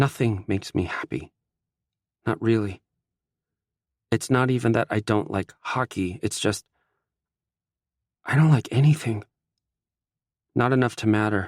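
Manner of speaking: trembling voice. Mickey answers an apology, speaking with a shaking voice. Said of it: "My voice shakes".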